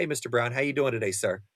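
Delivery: acted polite formal tone. Acting out how to greet an older customer: acting out polite formal greeting. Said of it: "if your father comes in".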